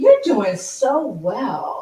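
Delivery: put-on slow, high, loud kid-talk praising tone.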